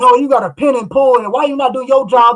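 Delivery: loud put-on coach-like screaming. Retelling screaming at the TV during Bills games like a coach: imitating own screaming at the TV. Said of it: "I'm screaming at the T V like I'm a coach".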